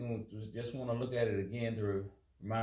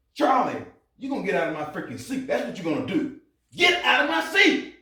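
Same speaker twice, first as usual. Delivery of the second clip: very loud, very high, shrill, furious, rising pitch; 9 semitones higher, 11 dB louder than usual. In a skit, a character orders Charley out of the seat: angry, demanding. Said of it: "I think you got anger issues".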